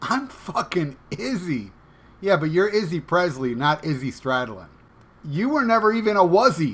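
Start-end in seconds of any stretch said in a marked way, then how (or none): 0.0-1.7 mock puffed-up, full-of-itself, egotistical delivery. Mocking how a podcaster talks about himself: imitating Izzy's egotistical tone. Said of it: "by the tone of that voice".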